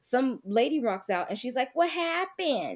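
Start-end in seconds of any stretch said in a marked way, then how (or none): 1.7-2.8 put-on, laid-on New England accent, raised pitch. Telling a story, imitating a lady who turns up, in a new england accent. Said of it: "With that very like New England accent".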